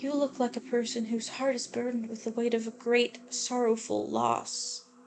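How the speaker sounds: acted soft, gentle voice. Reading a game character's line to the player: gentle Grace voice. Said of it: "she does have a very gentle voice".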